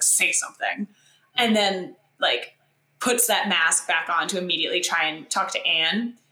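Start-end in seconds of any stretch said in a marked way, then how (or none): 0.0-0.9 play-acted, vicious, hostile snarl. Describing a man turning his face to Elizabeth; retelling a snarl. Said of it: "he just snarls like".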